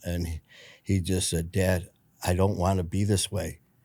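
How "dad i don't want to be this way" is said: imitated crying, tearful voice. Retelling a son's words to his dad: imitating someone crying. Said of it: "Kevin started crying".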